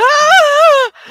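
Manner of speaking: high-pitched, loud panicked yelp. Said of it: "he's just like".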